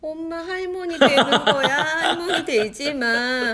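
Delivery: put-on high, loud, slow, tearful wailing child voice. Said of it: "막 울면서".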